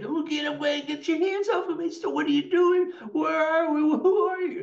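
put-on scared ten-year-old voice, sobbing, very high pitch. Recounting going under and panicking, imitating a sobbing 10-year-old kid. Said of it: "talking like a little 10-year-old kid".

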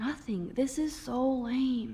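slow, whiny, drawn-out voice.

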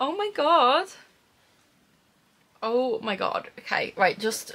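on the verge of tears. Opening a surprise gift package: on the verge of tears. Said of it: "I'm literally going to cry".

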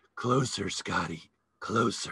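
husky, low film-star voice. Retelling how Kim Novak called to him as he stood holding a flashlight, in Kim Novak's husky voice. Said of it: "in her husky voice".

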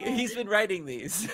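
loud, high delivery, laughing through the words. Telling a story about someone, laughing.

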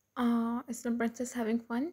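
plain

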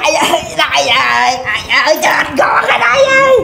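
desperate, pained yelling cry.

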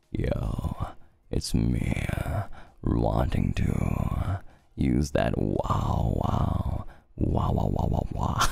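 very slow, creaky, rough, drawn-out character voice. Trying out a voice with the mouth close to the microphone: Hex Haywire voice. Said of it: "that Hex Haywire E voice".

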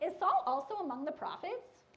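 put-on kind of Valley Girl delivery. Quoting the people's question about Saul, kind of Valley Girlish. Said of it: "I don't know why I said it that way, it's kind of Valley Girlish".

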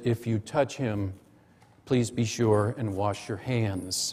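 mock very calm tone. Recalling what a nurse said on the unit, imitating a very calm voice. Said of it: "she said to me in a very calm voice".

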